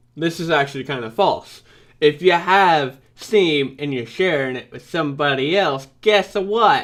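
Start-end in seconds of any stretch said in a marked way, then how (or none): 2.0-6.9 slipping into a Southern accent. Correcting another speaker about Steam library sharing, slipping into a southern accent. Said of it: "I went into a southern accent there".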